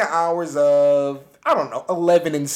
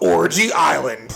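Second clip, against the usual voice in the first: laid-back action-sports dude delivery; 3 semitones lower than usual. Telling a story, the speaker says the island's name like an extreme sports guy. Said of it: "You got to say it like an extreme sports guy".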